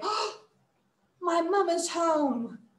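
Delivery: surprised exclamation. Voice exercise: caught eating forbidden cookies as mom comes home: surprised. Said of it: "you sound surprised and you say".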